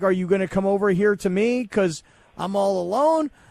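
ordinary talk, nothing marked

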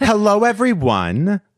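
very high, loud voice. Trying the greeting again after being asked, in Rana's voice. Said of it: "I'll try it again".

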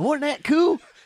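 put-on high, loud excited kid voice.

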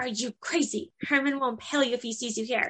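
furious, angry, hissed half-whisper. Retelling a scene where a character angry half-whispers: retelling an angry half-whisper. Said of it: "And then she angry whispers".

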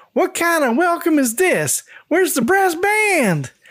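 shrill, very high, hollered, shouted country twang. Narrator reads an old woman arriving at the front door, yelling with a country twang. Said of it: "yells out with a country twang".

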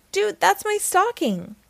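very high-pitched, sharp crying out. [name] speaks to Sammy at Christmas, crying out. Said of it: "cried [name]".

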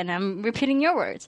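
usual speaking voice

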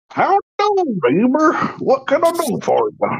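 very high, swooping, put-on old man voice. Showing the others how everyone pretended as kids: old man voice. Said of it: "everybody's pretended to be an old man".

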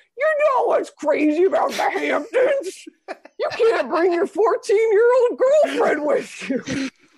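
very high stand-up comic voice, pitched way up. Retelling a bad script reading by Seth Rogen: imitating Seth Rogen doing Jerry's stand-up. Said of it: "he's just like".

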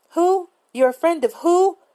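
very high, shrill, half-yelled, near-yelling voice. Reading a story where an annoyed woman answers the phone: nearly yelling. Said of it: "She was damn near yelling at me".

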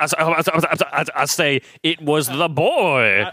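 cartoon rooster voice with Southern accent. Friends describing a cartoon rooster, one quoting him in a Foghorn Leghorn impression. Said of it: "And his name is Foghorn Leghorn".

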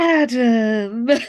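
sighed delivery. Retelling a scene from a show: imitating a sigh. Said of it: "she just sighs".

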